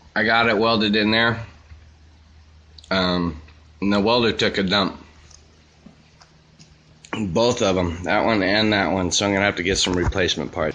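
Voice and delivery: speaking with mouth full. Speaker reports on a welding job, mouth full of cookie. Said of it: "With the mouth full of cookie".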